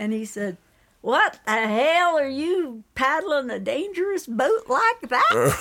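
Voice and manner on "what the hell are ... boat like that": put-on heavy Southern accent, laid on thick, pitched up. Quoting a Grand Canyon trip boatman, in a thick Southern accent. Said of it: "he had a very thick Southern accent".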